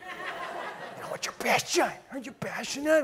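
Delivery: high, mock-gushing tone, properly pronounced "passion".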